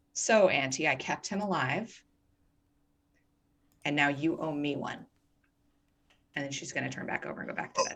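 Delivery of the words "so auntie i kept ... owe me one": secretive little private aside, casual talking. Voicing a character counting diamonds while others sleep: very quiet voice. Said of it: "she's just gonna very quietly say".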